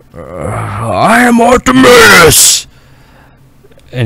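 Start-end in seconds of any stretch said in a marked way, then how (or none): 0.1-2.6 high, loud giant dragon yell, stretched-out "I". Game master voicing the dragon Artemis as he shakes his head: Artemis the dragon yelling. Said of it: "he just yells".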